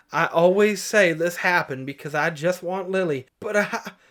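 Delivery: plain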